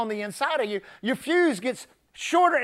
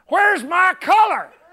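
mock irate, shrill, loud angry woman's voice; 7 semitones higher, 6 dB louder than usual. Retelling a customer's complaint about her TV: imitating an angry woman. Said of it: "she was angry".

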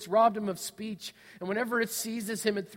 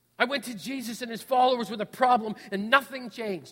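ordinary delivery

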